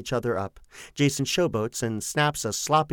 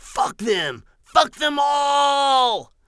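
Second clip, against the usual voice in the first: shrill, high yelled outburst, "all" drawn out; 13 semitones higher, 6 dB louder than usual. Narrator reads Kenny pointing at the dressing room entrance: yelling. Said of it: "Kenny, yelling".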